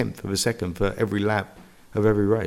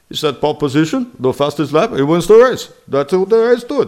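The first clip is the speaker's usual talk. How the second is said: curt, chopped-up, bare-minimum phrasing in a raised voice; 7 semitones higher, 7 dB louder than usual. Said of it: "He's very chopped".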